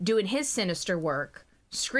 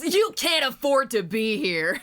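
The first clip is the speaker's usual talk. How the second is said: loud, icy, cold, superior, arrogant voice; 4 semitones higher, 5 dB louder than usual. Riffing with the other speaker, doing a Kaiba voice. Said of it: "Kaiba voice".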